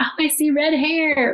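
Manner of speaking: high, drawn-out, excited shout. Retelling the birth, the doctor seeing the baby: imitating the doctor screaming. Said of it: "she screamed, the doctor screamed".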